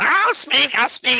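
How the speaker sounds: very high, slow, drawn-out imp voice. Voicing a small imp that scuttles out before the heroes: voicing an imp. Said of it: "Speak, imp".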